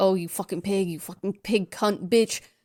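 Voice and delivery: mimicked creepy voice. Retelling an obscene phone call: imitating the caller's creepy voices. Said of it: "The guy calls again using so many different voices".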